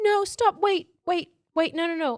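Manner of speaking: frantic, high-pitched pleading tone. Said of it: "she's all like".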